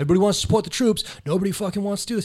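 high, angry, ranting yell. Describing a man who followed them while shopping, imitating a man yelling. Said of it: "He's like yelling at me".

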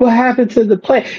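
put-on very high, small, hurt little-girl voice. Retelling a wrestler's reaction after being eliminated: imitating Bayley's hurt little-girl voice. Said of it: "it's the way her voice said it".

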